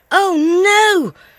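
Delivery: loud, high cry with the word "no" drawn out. Zoe points to her left, crying out. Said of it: "Zoe cried".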